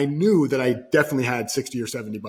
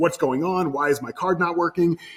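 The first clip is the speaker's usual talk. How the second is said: angry, irate yelling, pitched up; 5 semitones higher than usual. Retelling an angry call to the bank: imitating himself yelling. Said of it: "yelling at him".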